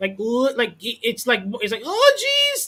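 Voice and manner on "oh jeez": very high, put-on cartoon character voice. Describing a talking alien gun in a game: Morty voice. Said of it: "he's using his Morty voice".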